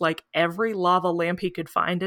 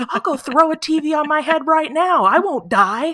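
mock high-pitched, loud yelling rant; 9 semitones higher, 6 dB louder than usual. Retelling an interview about whether Stu is dead, imitating Matthew Lillard yelling. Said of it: "he's like yelling about it".

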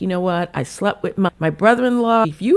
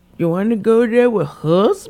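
put-on London accent; 3 semitones higher, 3 dB louder than usual. Retelling a line from the episode: Meredith's London voice. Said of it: "that London voice".

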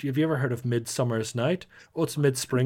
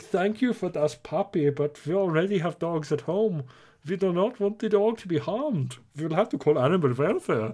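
put-on German accent in biker voice; 4 semitones higher than usual. Retelling a made-up encounter with German Hell's Angels: imitating German Hell's Angels. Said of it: "who are like".

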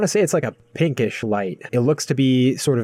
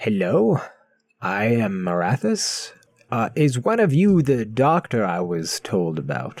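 put-on aged, wizened old creature's voice. Voicing an old, wizened Uthmela greeting the group: old wizened Uthmela. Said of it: "An old, wizened-looking Uthmela comes from the back and says".

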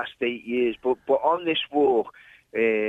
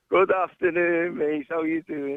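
tired, worn-out, low-energy, slightly high voice; 5 semitones higher than usual. Greeting the host who has just welcomed him, sounding tired. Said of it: "you sound tired".

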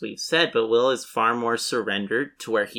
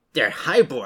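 normal talking voice

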